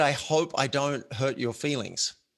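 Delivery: ordinary talk, nothing marked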